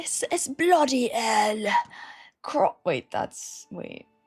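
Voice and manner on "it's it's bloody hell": terrible, slow, put-on English accent. Asked by viewers how their English accent is, the speaker shows a bad English accent. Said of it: "How is your English accent?".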